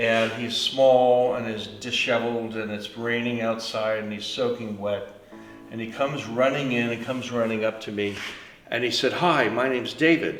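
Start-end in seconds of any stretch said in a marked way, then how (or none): 9.1-10.4 put-on English accent, spoken more slowly. A drenched man runs up to introduce himself; imitating David's English accent. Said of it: "It was English accent".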